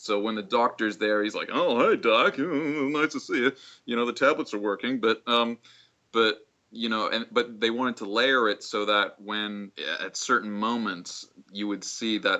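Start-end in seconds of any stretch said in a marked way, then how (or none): 1.5-5.0 forced, overly casual, put-on normal-sounding voice. Showing how the Joker character greets the doctor: Joker faking a sane voice. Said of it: "doing an impression of what he thinks a sane person sounds like".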